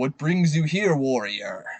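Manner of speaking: thundering, resounding, booming royal king's voice. A game master voices a king greeting the arriving player; booming voice. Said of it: "He says with a booming voice".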